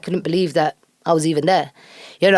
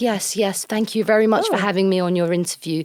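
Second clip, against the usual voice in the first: put-on formal voice; 2 semitones higher, 3 dB quieter than usual. Retelling how interviews usually go: imitating own formal interview voice. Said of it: "speak like this".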